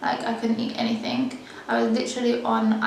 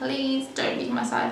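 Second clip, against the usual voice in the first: frightened, panicked, tearful, close to crying; 2 semitones higher, 3 dB quieter than usual. Retelling begging someone not to leave while transferred to hospital, in panicked pleading. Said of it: "panicking like anything".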